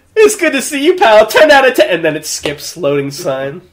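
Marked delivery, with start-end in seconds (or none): 0.2-1.9 wildly exaggerated character voice, shrill, very high and loud. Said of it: "really over the top".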